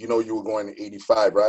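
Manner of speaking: ordinary delivery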